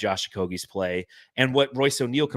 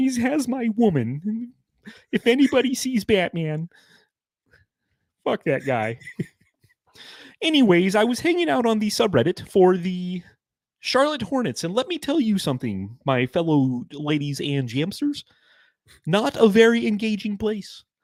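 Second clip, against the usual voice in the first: very high-pitched cartoon frog puppet voice; 10 semitones higher than usual. Addressing fellow jamsters about a team subreddit, in a Kermit the Frog voice. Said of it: "let's let's do Kermit".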